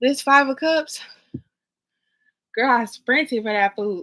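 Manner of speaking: out of breath, panting. Talking to the camera after sprinting for food, out of breath. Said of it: "let me catch my breath".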